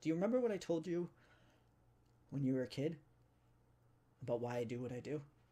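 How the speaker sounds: tone shifting into real seriousness, grave. Retelling what a woman said after spitting, in a serious voice. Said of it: "her voice kind of goes into a more serious voice".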